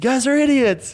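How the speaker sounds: mock shrill, very high, loud angry yell. Retelling a skate clip where the girl in the car starts yelling: imitating a woman yelling. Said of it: "the girl in the car starts yelling".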